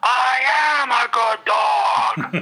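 very high-pitched, loud triumphant yell. Retelling a tabletop game moment, acting out a player's yell. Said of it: "and I yell out".

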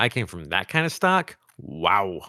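usual speaking voice

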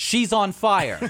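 loud, high yell, said slowly.

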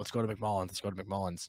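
ordinary talk

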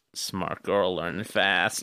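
put-on drawling voice. Quoting a creepy character's line: half Matthew McConaughey voice. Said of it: "half do a Matthew McConaughey voice".

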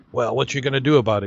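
menacing, threatening tough-guy voice. Telling a joke, the narrator voices a biker who just gulped a diver's drink, menacing. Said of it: "he says menacingly".

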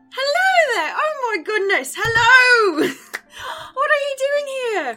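cheerful, happy voices. A game narrator voices people greeting the three arriving players, happy voices. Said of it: "you hear, like, happy voices nearby".

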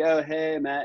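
laid-on, put-on Californian-sounding accent. Describing an embarrassing old video of himself, quoting it in a California accent. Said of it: "I like a California accent".

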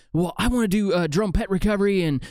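high, fired-up, passionate rush of words. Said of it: "he gets all fired up".

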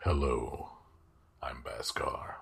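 deep, guttural dragon voice, breathy near whisper. Voicing the yellow dragon Baskar introducing himself, deep guttural Baskar voice. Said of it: "Baskar also sounds deep guttural".

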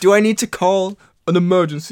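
gruff tough-guy manner. Acting out an Among Us accusation at parents: Stallone voice. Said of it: "I sound like Stallone".

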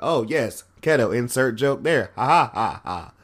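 mock robotic voice, droned out slowly. Podcast host mocking podcasters who sound robotic, mock robotic podcast voice. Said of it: "it sounds robotic".

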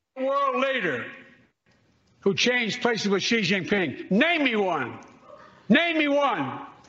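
acted angry old man rant, very high, swooping. Challenging someone to name a world leader, sounding angry. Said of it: "Why are you so mad?".

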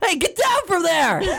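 very high-pitched, scolding yell. On a show, taking a turn as the group goes around: like yelling at a cat. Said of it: "Sounds like yelling at a cat".

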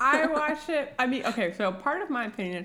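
talking with mouth full of ice. Chatting about a show, the speaker talks with ice in their mouth. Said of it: "I put ice in my mouth".

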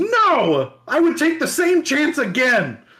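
proud, resounding, ringing voice, drawing out no. Retelling the hero's answer when asked about regret, a proud, ringing reply. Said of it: "He would proudly reply in ringing tones".

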